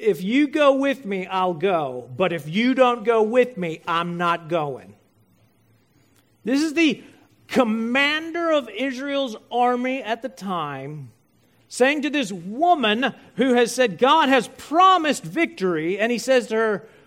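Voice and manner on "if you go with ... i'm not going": put-on manly voice. Retelling Barak's reply to a woman, in Barak's most manly voice. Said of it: "in his most manly and masculine voice".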